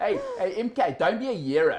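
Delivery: put-on thick South African accent.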